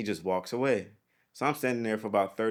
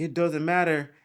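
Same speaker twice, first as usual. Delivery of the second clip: acted-out, raised, high-pitched yell; 8 semitones higher, 5 dB louder than usual. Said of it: "he's yelling at me".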